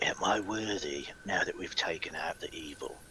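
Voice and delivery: very quiet, hushed whisper. Kneeling in front of a cairn as a character: whispering a prayer. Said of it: "I'm gonna kinda whisper in front of me".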